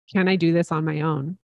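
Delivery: normal talking voice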